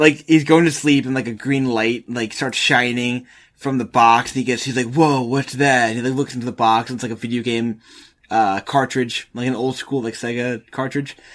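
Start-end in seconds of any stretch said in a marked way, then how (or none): 4.9-5.9 laid-back, chill dude voice. Retelling a film, voice the guy noticing a green light from the box, Keanu Reeves voice. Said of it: "I keep doing like Keanu Reeves voice".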